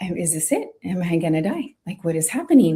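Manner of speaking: put-on quiet crying, tearful voice. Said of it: "I start to cry".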